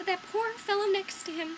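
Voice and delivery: high-pitched, loud voice full of pity.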